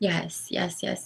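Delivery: emotional, hushed yeses.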